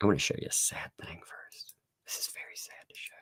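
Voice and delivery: barely audible, very soft, breathy whisper. Showing a sad thing to the viewers first: whispering. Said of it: "why am I whispering?".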